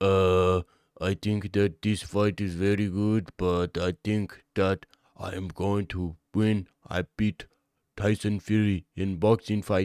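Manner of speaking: slow, deliberate interview voice, word by word. Retelling how Francis Ngannou talks in public: Francis Ngannou impression in public. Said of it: "he goes out into the public and he's like".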